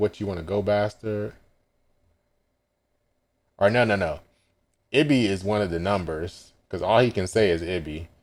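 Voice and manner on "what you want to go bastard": plain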